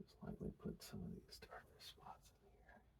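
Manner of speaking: hushed whisper under the breath. Narrating a painting demonstration in a quiet room, whispering. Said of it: "I don't know why I'm whispering".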